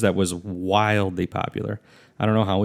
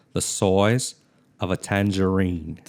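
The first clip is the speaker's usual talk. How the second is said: slow, deliberate Australian accent. Showing the phrase people practise for an Australian accent: Australian accent. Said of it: "vocal things to get your accent right".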